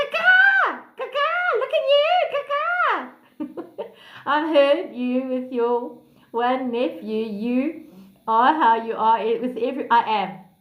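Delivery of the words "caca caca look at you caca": very high, drawn-out clucking chicken voice. Speaker shows the listeners their chicken voice. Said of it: "That's my chicken voice".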